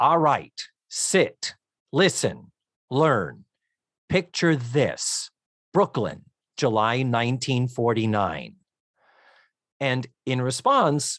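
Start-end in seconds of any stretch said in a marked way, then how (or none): 0.0-8.6 grumpy, cranky, irritable, short-tempered delivery. Retelling a scene where Sophia, just woken up, starts her advice story: imitating cranky Sophia. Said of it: "Sophia is cranky as fuck".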